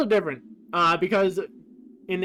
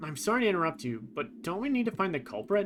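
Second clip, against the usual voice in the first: plain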